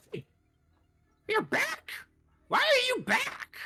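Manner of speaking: very high, very loud, shrill, swooping startled screech. Voicing a Pansage surprised that the group came back: screeching in surprise. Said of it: "this Pansage will screech in surprise".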